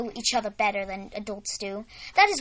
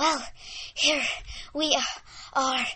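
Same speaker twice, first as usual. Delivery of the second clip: between breaths, catching breath; 3 semitones higher than usual. A narrator reads Sarah arriving at the barn with Miss Rosie, between breaths. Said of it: "said Sarah in between breaths".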